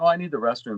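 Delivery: plain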